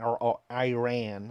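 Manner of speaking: slow, drawn-out American pronunciation of Iran. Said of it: "as the Americans call it".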